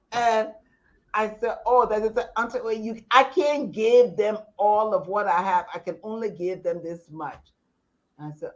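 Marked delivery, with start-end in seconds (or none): none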